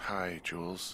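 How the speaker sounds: tired, weary voice. Greeting someone, the speaker sounds tired. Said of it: "you sound tired".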